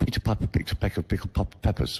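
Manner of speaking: hard plosive p bursts popping into the mic. Showing a bad mic position: popping plosives into the mic. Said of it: "But what if I do it here?".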